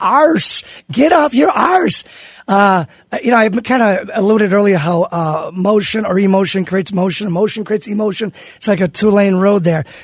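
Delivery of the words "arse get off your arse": put-on pitched-up Irish accent. Quoting a saying of the speaker's mother and grandmother, in her irish accent. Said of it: "as my mother and grandmother used to say with her her irish accent".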